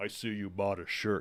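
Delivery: towering, deep-sized voice. Recounting a fan who approached after the show, imitating his big thundering voice. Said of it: "He's got this big thundering voice".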